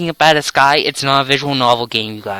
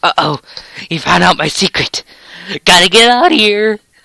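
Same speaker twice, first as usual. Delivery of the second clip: high voice that breaks and squeaks; 5 semitones higher, 3 dB louder than usual. Narrator voices the little sister dodging a question, with her voice cracking. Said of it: "that voice crack".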